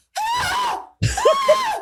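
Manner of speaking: mock thrilled high excited screaming, over and over. Speaker recalls seeing an orca on the ferry, imitating own screaming. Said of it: "And then I kept screaming".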